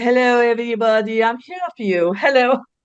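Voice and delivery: put-on French woman's character voice. Recalling childhood, the speaker performs for their mom and another woman: 'French woman' character voice. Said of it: "this character called the French woman".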